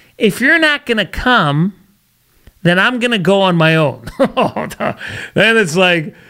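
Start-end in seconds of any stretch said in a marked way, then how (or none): 0.2-4.1 put-on woman's voice, played for effect. Doing the wife or girlfriend voice for effect, put-on wife voice. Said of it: "I'm going to do the wife voice, the girlfriend voice".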